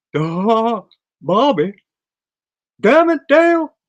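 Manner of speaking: very high, very loud cartoon voice with big swoops. Speaker showing off cartoon impressions, doing a Hank Hill impression. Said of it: "it's Hank Hill".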